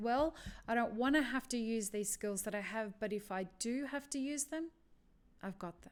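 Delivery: ordinary talk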